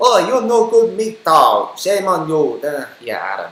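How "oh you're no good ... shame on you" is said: slow, loud put-on broken-English Chinese accent. Speaker showing how something sounds to them, in a mock chinese accent. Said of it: "sounds like a Chinese person learning English for the first time".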